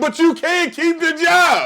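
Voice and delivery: shrill, very loud, high, drawn-out yell. Retelling what another speaker just yelled out: imitating someone yelling. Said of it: "when she just yelled out".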